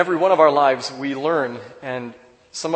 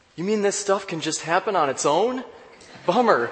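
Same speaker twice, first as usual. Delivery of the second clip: put-on high, puzzled, baffled, bewildered little girl voice; 5 semitones higher than usual. Telling a story, the speaker retells a girl's reply, acting bewildered. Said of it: "in a bewildered voice she said".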